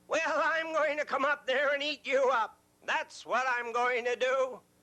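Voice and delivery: high, furious, yelling troll voice. Reading a story aloud, the troll answers George, the biggest billy goat, in troll voice. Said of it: "But under that bridge lived a big, ugly troll. / His eyes were as big and round as pie plates. And his nose was as long as a fireplace poker".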